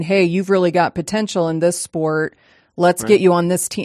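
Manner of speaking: ordinary talk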